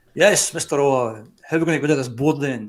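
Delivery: large, booming put-on voice. Retelling a phone call where a man comes on the line; imitating a big booming voice. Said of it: "this big booming voice comes on".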